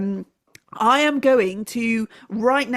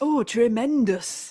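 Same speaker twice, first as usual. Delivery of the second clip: slipping into a put-on Northern English accent. Put on the spot to voice a serious male christmas tree, in a northern english accent. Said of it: "it's Northern now. I've gone Northern".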